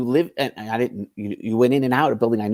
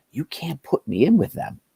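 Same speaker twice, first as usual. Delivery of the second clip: voice dropped to a whispered aside; 3 semitones higher than usual. Speaker acts out a man whispering to him in the cell, retelling a whisper. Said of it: "He whispers to me".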